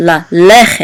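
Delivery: lalechet said with stress on le. Teaching Hebrew word stress with two segols: stress on le in lalechet. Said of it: "You're going to give the accent to the first segol".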